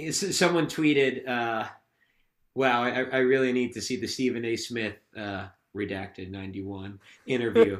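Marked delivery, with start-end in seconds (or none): none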